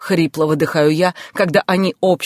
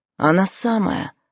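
reply sighed out; 3 semitones higher than usual. First-person narrator answers Oleg's sharp call of her name, sighing. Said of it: "— вздыхаю я".

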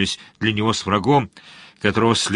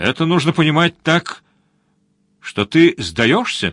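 sneering, teasing, mocking tone, pitched up; 5 semitones higher than usual. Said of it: "насмешливо спросила черноволосая".

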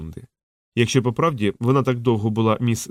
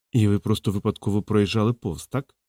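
ordinary delivery, nothing marked

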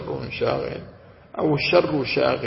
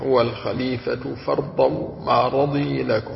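usual speaking voice

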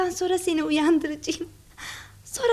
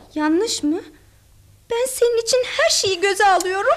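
loud, tearful weeping; 5 dB louder than usual. In a drama scene, answering someone who calls their plan wrong: crying. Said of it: "Dur canım, ağlama".

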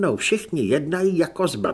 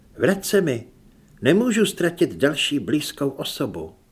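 ordinary delivery

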